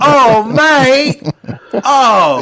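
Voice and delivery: shrill, very high screaming cry.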